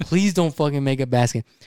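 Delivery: plain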